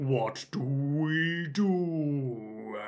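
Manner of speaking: soft, slowed-down, drawn-out slow-motion speech. Retelling a story, voicing a hospital nurse in a slow-motion voice. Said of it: "They've all got slow voice".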